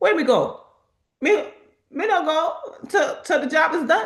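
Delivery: put-on very high-pitched Caribbean accent. Retelling what Shanette said after being thanked, imitating Shanette's Caribbean accent. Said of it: "That's my best um / Your best accent".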